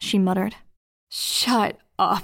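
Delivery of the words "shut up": harder-edged, strained voice, tight with pain. In first-person fiction, the narrator in pain retorts to a woman, voice strained. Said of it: "the pain making my voice strained, harder edged".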